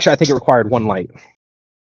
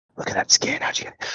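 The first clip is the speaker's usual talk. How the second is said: whispering in hushed tones. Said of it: "they will whisper in hushed tones".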